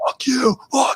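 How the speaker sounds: put-on, very high, raw raging scream. Retelling a planned wrestling angle, the wrestler's outburst: imitating raging screaming. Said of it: "screaming, dude, like, really showing rage".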